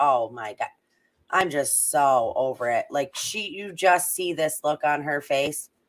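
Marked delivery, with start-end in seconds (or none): 0.0-2.9 fed-up, exasperated, irritated tone. Voicing what someone in a picture seems to think: imitating irritated Sammy. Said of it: "She looks so irritated".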